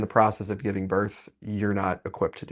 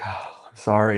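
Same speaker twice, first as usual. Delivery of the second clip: mock tearful, crying voice; 3 dB louder than usual. Retelling his partner's apology during labor: imitating someone crying. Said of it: "And she started crying".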